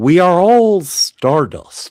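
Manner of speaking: unhurried, drawn-out narrator voice. Joining dueling impressions, read out a chat member's message in the style of Carl Sagan. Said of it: "in the style of uh, Carl Sagan".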